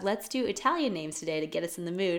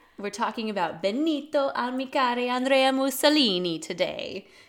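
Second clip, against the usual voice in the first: bad, over-the-top put-on Italian accent, pitched up; 4 semitones higher than usual. Introducing today's topic to listeners, in a really bad Italian accent. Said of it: "using a really bad Italian accent".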